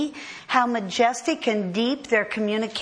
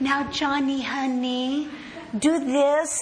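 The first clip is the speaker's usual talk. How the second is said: put-on tender, simple, loving baby talk; 3 semitones higher than usual. Illustrating how a loving mother speaks to an infant child, in baby talk. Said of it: "The kind of speech a loving mother would communicate to an infant child".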